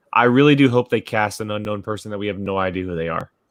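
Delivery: ordinary talk, nothing marked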